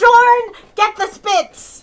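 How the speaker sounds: very high, loud yell, as if far off.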